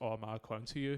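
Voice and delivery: ordinary talk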